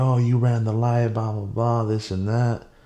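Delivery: put-on yelling, accusing and ranting, toned down. Retelling what the other rider said after the crash: imitating someone yelling. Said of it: "so now he's yelling".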